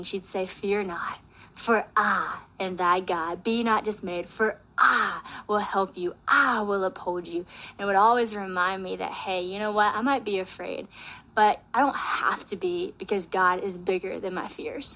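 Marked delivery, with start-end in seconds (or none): 0.4-7.4 put-on heavy, thick Southern American accent laid on thick. Retelling how a great grandma read a verse: thick southern accent. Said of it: "in the most southern thick accent".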